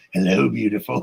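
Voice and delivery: disguised, creepy, put-on stranger voice. Retelling a joke plan to scare a spouse: imitating a creepy changed voice. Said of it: "grab you and change my voice".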